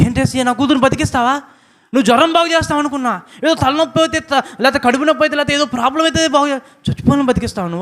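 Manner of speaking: high-pitched, astonished, disbelieving outburst.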